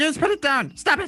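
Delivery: very high, sped-up, rapid-fire squeaky chatter. The narrator voices a thing speaking to a player, very quickly. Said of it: "it says very quickly to you".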